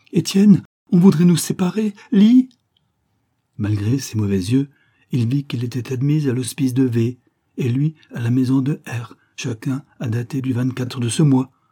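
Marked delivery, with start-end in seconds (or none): 0.2-2.5 very high, quivering, trembling cry. A woman cries out to Bastelat, trembling, as if calling for help. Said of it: "elle cria, toute frémissante, comme pour appeler au secours".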